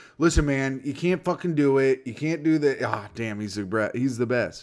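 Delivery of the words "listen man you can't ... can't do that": normal talking voice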